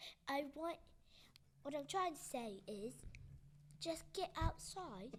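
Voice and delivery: put-on British accent. Repeating a closing thought when asked, in a put-on British accent. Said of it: "Can you say that with your British accent?".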